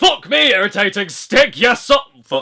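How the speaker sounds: put-on northern English accent. Swearing about beating a stage: northern English accent. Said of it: "were you even swore in a northern accent?".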